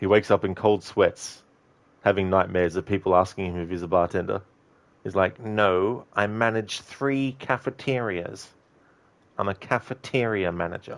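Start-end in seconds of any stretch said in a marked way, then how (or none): 5.4-11.0 slow, drawn-out, self-important and dignified fancy-sounding tone. Describing a cafeteria manager who hates being called a bartender, Garte impression. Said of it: "That's my best impression of him".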